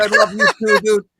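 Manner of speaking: mock very high, gushing, excited shout. Retelling replying to a streamer's praise in chat: retelling a scream. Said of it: "I'm just fucking screaming at the screen".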